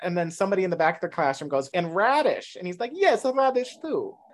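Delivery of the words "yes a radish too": put-on slow, high, drawn-out Romanian accent. Retelling his reply to someone in the back of the classroom, in a Romanian accent. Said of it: "he's talking a Romanian accent".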